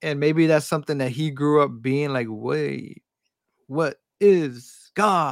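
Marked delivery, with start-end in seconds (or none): 2.3-5.3 very slow starship captain voice, every word drawn out. Discussing how Kirk thinks about God, the speaker does a Kirk impression. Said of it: "that's my best impression".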